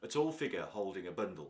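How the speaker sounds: ordinary delivery, nothing marked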